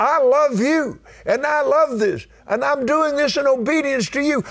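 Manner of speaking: fervent, high, impassioned crying out.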